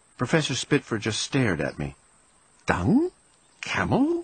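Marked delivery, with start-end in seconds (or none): 2.7-4.3 murmured, very high pitch, puzzled. The professor stares at a young mouse who has just spoken; murmured. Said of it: "He murmured".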